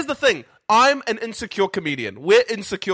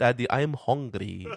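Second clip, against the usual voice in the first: put-on sounding like an elderly Persian woman with accent; 8 semitones lower, 6 dB quieter than usual. Father retelling what she said to him in the dark, old persian woman accent. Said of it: "she sounded like an 80-year-old Persian woman".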